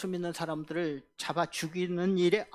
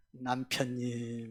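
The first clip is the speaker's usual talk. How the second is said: sweet, tender, loving voice, lower pitch; 6 semitones lower, 5 dB quieter than usual. Preacher showing the congregation how to call a husband, sweet loving voice. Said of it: "이렇게 사랑스러운 목소리로".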